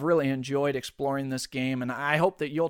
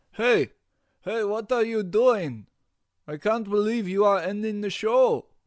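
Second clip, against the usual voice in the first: bad Russian accent, loud and high; 7 semitones higher, 5 dB louder than usual. Crashing the podcast's closing as the russian stereotype character, in a bad russian accent. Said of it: "to speak with bad Russian accent".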